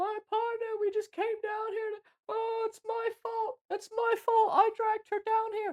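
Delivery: acted-out shrill, tearful, very high, loud distraught crying. Retelling how a wife came up to a bystander, imitating distraught crying. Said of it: "comes up to the bystander and is like distraught, crying, freaking out".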